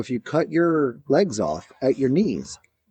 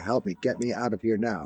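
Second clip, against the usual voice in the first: put-on synthesized computer voice, lower and quieter; 3 semitones lower, 7 dB quieter than usual. Retelling what a man types into his computer for others to hear: imitating a computer speech voice. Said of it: "type into his computer".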